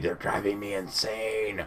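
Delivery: slow, soft, hushed half-whisper. Retelling what someone half-whispers to the speaker while another person rambles on, half-whispering. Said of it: "whispering to me".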